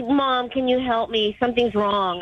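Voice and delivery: ordinary talk, nothing marked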